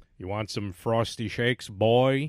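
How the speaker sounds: loud, odd, early-cartoon style father voice. Recalling an early Simpsons scene, playing the dad talking to his boy, weird early Homer voice. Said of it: "That's when he had that weird voice".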